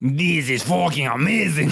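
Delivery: poorly faked French accent. Trying again to imitate the French author reacting: bad French accent. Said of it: "That was even worse".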